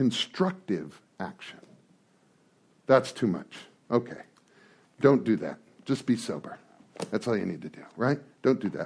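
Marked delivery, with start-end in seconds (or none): 2.9-8.9 heavy, very sarcastic delivery. After reading a passage aloud, the speaker turns very sarcastic. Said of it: "I'm being very sarcastic at this moment".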